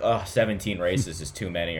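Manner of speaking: normal talking voice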